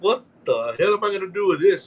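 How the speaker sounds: ordinary delivery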